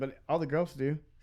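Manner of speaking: ordinary talk, nothing marked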